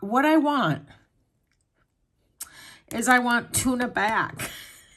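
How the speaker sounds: high, tearful crying through the words. Speaker talks about wanting her adopted-out kitten tuna back, crying. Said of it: "I'm sorry, I'm crying".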